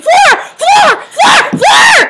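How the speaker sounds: very high, long, stretched-out thrilled excited shrieks. Recalling suddenly getting a floor ticket mid-call, retelling the scream. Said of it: "I just start screaming".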